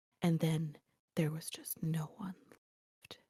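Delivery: very hushed, soft voice trailing off and fading out. Describing an audiobook narrator who trails off for effect, imitating a soft trailing-off voice. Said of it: "she'll be like".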